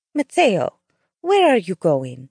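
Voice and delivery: scared, frightened tone, pitch swinging widely. A woman calls after a man stomping out the door, in a frightened voice. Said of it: "she asked in a frightened voice".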